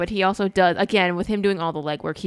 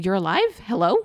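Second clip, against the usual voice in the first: plain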